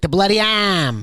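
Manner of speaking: weird put-on New England accent. Retelling how a cassette storyteller said the title: imitating a New England accent. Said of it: "he had this weird accent".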